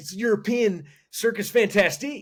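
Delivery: put-on high scream, words stretched long. Retelling a movie scene to another speaker: imitating Mike screaming. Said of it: "and in his voice".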